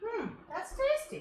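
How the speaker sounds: astonished. Tasting a sauce while cooking and reacting: surprised. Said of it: "I say it like I'm so surprised".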